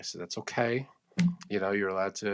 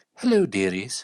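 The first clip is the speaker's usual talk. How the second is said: put-on loud old English lady voice; 6 dB louder than usual. Dressed as Mrs. Doubtfire, greeting people in a Mrs. Doubtfire voice. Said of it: "Older woman".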